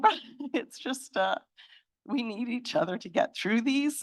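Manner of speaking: talking through tears. Speaker talking about people relying on each other in hard times, crying. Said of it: "I'm crying".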